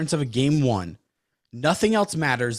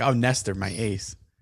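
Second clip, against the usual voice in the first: mock gushing voice, lower; 3 semitones lower than usual. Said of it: "be like".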